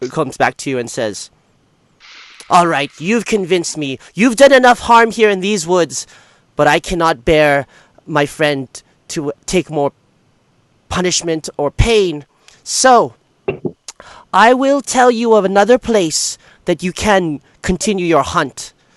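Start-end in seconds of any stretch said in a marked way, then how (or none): 2.5-18.7 small, tiny, regal, noble forest-sprite voice. Narrating a scene, the speaker voices a sprite turning back to a player: tiny regal sprite voice. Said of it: "this little tiny regal-looking glowing humanoid with dragonfly-like wings appear in front of you, / this little tiny regal-looking glowing humanoid with dragonfly-like wings appear in front of you, /".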